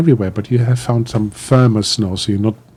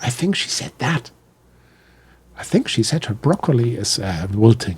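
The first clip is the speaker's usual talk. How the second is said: hushed whisper, quieter; 5 dB quieter than usual. Voicing a character's whispered guess about another's words: whispering. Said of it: "And you sort of whisper, whisper, whisper".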